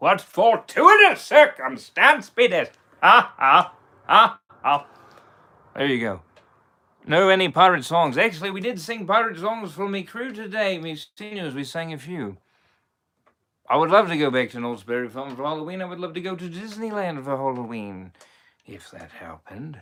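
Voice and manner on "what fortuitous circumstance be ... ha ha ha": high, loud cackling character voice. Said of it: "I'm a little rusty at Davy Jones".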